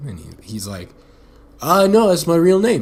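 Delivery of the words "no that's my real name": terrible fake English accent, pitched up. Retelling Alfie's reply to being asked about his name, imitating Alfie, bad English accent. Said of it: "I should probably try that again".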